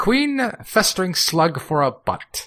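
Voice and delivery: drawn-out, high, swooping delivery. Naming a character from an Earthworm Jim episode: Queen Slug-for-a-Butt voice. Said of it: "let's see if I can do the voice".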